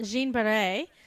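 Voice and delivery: put-on French accent and French pronunciation. Naming the woman she picked to talk about: french accent. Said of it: "I loved your French accent there".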